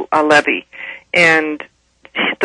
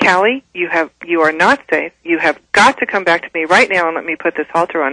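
normal talking voice

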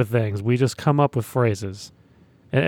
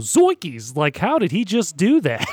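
amazed, psyched outburst, high and swooping; 5 semitones higher than usual. Showing a new call after a Steph Curry three: psyched commentator call. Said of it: "I'm really psyched, and I go".

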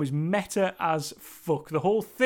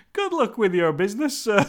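mock dead-straight, serious, no-joking delivery; 4 semitones higher, 4 dB louder than usual. Retelling a scene, Marty answers a man who just relieved himself: deadpan. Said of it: "just completely straight the whole way he delivers that line".

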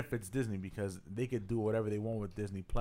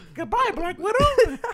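very high, very loud cartoon squeak; 14 dB louder than usual. Imagining hearing a voice during a kill on a mission, the speaker does a Mickey Mouse voice. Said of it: "you hear Mickey Mouse voice".

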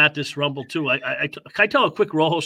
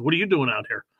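plain

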